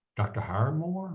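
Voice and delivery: put-on East Tennessee accent. Retelling what a receptionist asked: imitating an East Tennessee accent. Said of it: "who had that classic East Tennessee accent".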